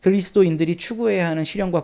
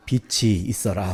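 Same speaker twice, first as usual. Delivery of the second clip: graceful, elegant dubbing-style voice-actor narration; 8 semitones lower, 3 dB quieter than usual. Quoting a Bible line the way voice actors perform it: elegant voice-actor voice. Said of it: "성우들이 하는 거 들으면 되게 우아해요".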